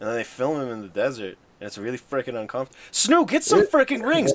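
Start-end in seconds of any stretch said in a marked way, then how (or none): 2.9-4.3 shrieking, very high, loud yell. Urging another player to get rings: yelling. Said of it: "less yelling, please".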